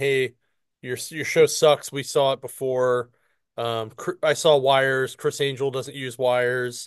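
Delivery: normal talking voice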